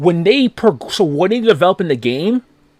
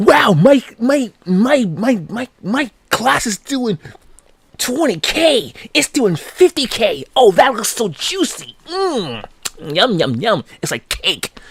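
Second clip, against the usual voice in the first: scornful, pitched-up mocking parody voice; 5 semitones higher than usual. Ranting about players who chase damage numbers, mocking imitation of a mobile gamer. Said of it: "You sound like a mobile game when you fucking act like that".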